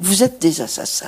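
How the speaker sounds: solemn, sorrowful tone. The speaker recounts what she said to herself, retelling a sad, grave remark. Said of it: "j'ai dit très tristement, très gravement".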